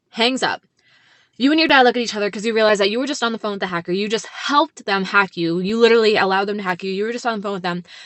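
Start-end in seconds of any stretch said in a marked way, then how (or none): none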